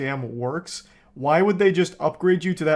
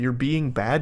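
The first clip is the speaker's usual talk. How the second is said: mocking, condescending tone, as if to a child; 4 semitones lower than usual. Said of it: "he's speaking like he's talking to a child".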